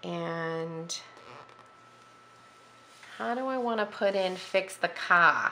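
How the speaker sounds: casual Boston accent, slipped into. Planning a journal page aloud, slipping into a Boston accent. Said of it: "I just sound like I was from Boston".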